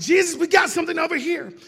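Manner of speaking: loud, high hollering yell. Retelling a Bible scene where Andrew calls out to Jesus: acting out a yell. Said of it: "Andrew yells".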